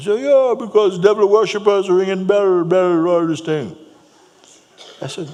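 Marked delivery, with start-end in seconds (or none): 0.2-3.8 very crusty, raised-pitch voice. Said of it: "very crusty voice".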